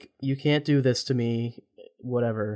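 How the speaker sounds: usual speaking voice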